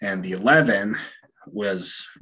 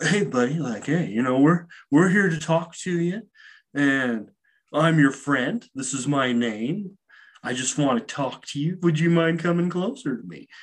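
laid-back surfer-dude voice, pitched up; 8 semitones higher than usual. Retelling a story, the speaker voices Randy talking to someone in a corner, imitating Randy. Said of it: "he's like a 70s surfer dude".

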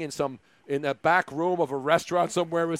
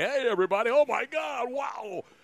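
put-on old-school, excited radio play-by-play, pitched up; 6 semitones higher than usual. Recalling guys on the air in radio, imitating old radio play-by-play. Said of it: "doing that style of play-by-play".

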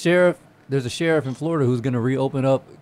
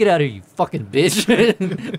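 mock furious angry outburst, spewing venom; 4 semitones higher, 4 dB louder than usual. Retelling yelling at the dog Kane in the kitchen: imitating own angry outburst. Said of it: "That's how much anger was spewing".

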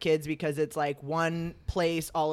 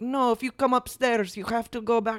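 put-on Eastern European accent, pitched up; 6 semitones higher than usual. Retelling what the lifeguard at the water slide said: imitating an Eastern European accent. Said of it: "a Eastern European accent".

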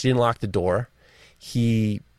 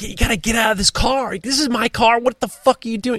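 very high, furious, out-of-control raging yell; 12 semitones higher than usual. Retelling ordering a drunk stranger out of the car: retelling yelling in a fury. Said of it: "And I'm losing my mind".

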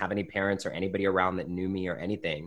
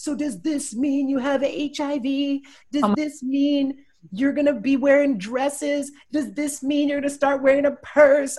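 high, tearful, hysterical crying and yelling at once; 9 dB louder than usual. Retelling their mother's reaction at the Cheesecake Factory, imitating her crying and yelling. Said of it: "hysterically crying and like yelling at me like".

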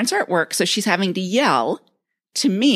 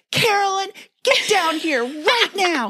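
put-on scream, higher pitch; 13 semitones higher than usual. Retelling Dad calling someone downstairs from the bottom of the stairs: imitating someone screaming. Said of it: "starts screaming and goes to the bottom of the stairs".

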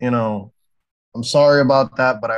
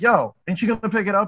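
mock loud shouted call-out, high pitched; 8 semitones higher than usual. Speaker retells a man yelling at them while they walked their dog: retelling a yell. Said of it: "yells at me like".

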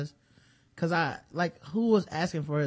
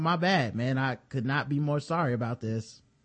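usual speaking voice

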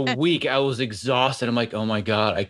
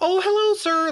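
very high, octave-up, polite voice with Midwestern sound. Speaker from northern Wisconsin shows a Midwestern tone of voice, raised an octave. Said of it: "The whole raising an octave".

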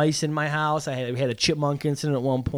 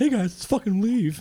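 high-pitched cartoon dog voice; 6 semitones higher than usual. Taking a turn at the joke line after a friend's try, in Scooby-Doo voice. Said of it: "that is Scooby".

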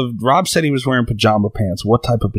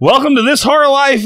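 mock bright, bubbly, loud, chipper show-host voice; 5 dB louder than usual. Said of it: "all fucking chipper and".

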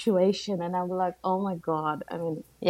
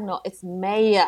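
put-on Australian accent, much slower. Recalling her husband correcting how she says a word, husband's australian accent. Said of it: "my husband's trying to teach me the Australian".

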